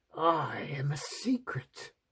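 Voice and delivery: hissing creature voice, like dripping water. Reading a story, a tiny creature from a shell speaks: hissing, like dripping water. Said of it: "it hissed in a voice that sounded like dripping water".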